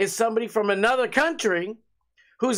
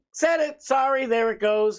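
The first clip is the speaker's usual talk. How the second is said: ordinary talk, nothing marked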